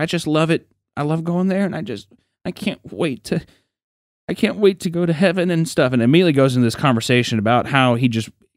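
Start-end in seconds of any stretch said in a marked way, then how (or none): 0.0-5.9 high, choked-up voice catching, put-on, close to tears. Retelling how a friend talked about heaven, imitating someone choking up. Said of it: "he starts kinda choking up".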